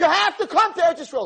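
fiery, shrill, very high-pitched scream. Retelling how a woman screamed at him in front of everybody: imitating a woman screaming. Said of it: "She's screaming".

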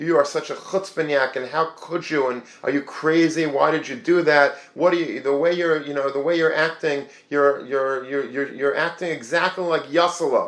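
put-on screaming, berating, scolding rant. Retelling a father scolding his son: imitating a father screaming. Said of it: "the father was screaming at the son".

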